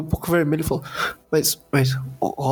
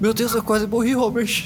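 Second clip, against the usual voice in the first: mock panting, acting out of breath; 6 semitones higher than usual. Describing a scene in the orphanage to a listener, acting out panting. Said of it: "ofegando assim".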